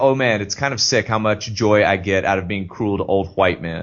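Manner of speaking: normal talking voice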